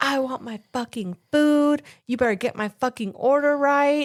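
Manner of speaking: play-acted, high-pitched screaming rant. Retelling how a girl yelled at a restaurant employee: imitating a girl screaming. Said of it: "like, screaming".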